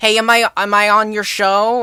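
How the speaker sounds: put-on heavy, thick, laid-on loud New York accent. Speaker retells a friend's mom answering while on stream, thick New York accent. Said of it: "her thick New York accent was like".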